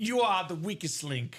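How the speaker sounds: slight put-on British accent in quiz-show host style. Repeating the game show catchphrase when asked again: British accent. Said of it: "wanna give me that, uh, accent one more time".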